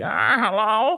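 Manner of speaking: put-on little-old-lady voice, very high pitched. Retelling a phone call, the speaker imitates the old lady who answered: old lady voice. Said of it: "it sounds like this fucking old lady".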